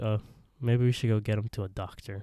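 ordinary talk, nothing marked

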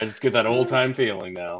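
ordinary talk, nothing marked

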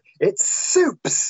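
high, insistent, fired-back delivery.

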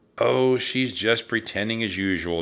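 ordinary delivery, nothing marked

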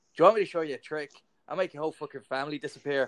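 put-on Northern Irish accent. Quoting a northern irish magician's joke: put-on northern irish accent. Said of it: "Such a cool accent".

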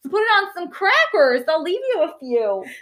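rough put-on Wisconsin accent. Sharing food with someone, attempted Wisconsin accent. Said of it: "that's probably not a Wisconsin accent".

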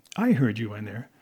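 ordinary delivery

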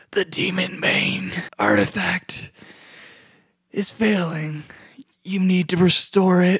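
rough, rasping stage whisper. Speaker retells what a figure beckoning them in says, retelling a rough half-whisper. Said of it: "a real rough whisper, he goes".

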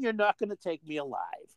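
ordinary talk, nothing marked

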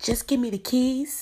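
loud, high-pitched yell. Retelling what a man yelled at a young lady, imitating a man yelling. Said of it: "he yelled at Yuri and said".

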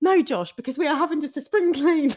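high, loud, defensive, justifying protest. Retelling what Pete said when asked about cleaning windows: imitating Pete sounding defensive. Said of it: "so defensive".

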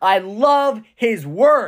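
joyful, slow, excited yell. A speaker urging listeners to shout it from the rooftops, yelling with excitement. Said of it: "Are you willing to yell it from the rooftops?".

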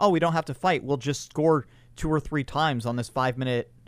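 ordinary delivery

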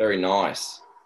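Australian-accented delivery. Asked to say it in australian, showing how australian would sound. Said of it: "Australian would be like".

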